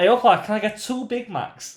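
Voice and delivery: put-on full Scouse accent, pitched very high. Retelling how Brian walked over and ordered at the counter, Brian's full Liverpool accent. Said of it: "in this full Liverpoolian accent".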